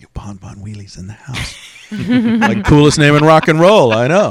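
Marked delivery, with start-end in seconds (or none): 0.0-1.5 very quiet, hushed half-whisper under the breath. Recounting what they half-whisper to people on walking in: retelling a half-whisper. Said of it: "I'm whispering".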